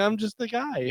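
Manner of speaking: meek, bashful voice. Retelling a movie scene where the unmasked killer speaks: imitating a timid, shy man. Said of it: "so timid and shy".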